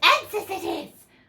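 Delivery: shrill, high-pitched, loud hissing cry. Narrator reading Gollum's reply aloud, in a hissing Gollum voice. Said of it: "he hissed".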